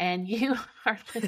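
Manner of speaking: laughing while talking. Starting the podcast intro, laughing while talking. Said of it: "And we're laughing".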